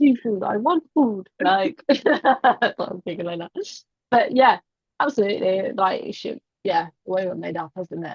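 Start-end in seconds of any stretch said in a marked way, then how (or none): 0.0-1.3 put-on caveman voice. Teasing the listener by acting out how they said seafood, caveman voice. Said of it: "I had you like caveman... like saying it like that".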